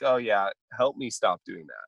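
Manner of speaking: normal talking voice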